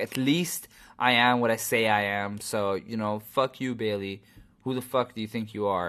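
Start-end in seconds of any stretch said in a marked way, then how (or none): none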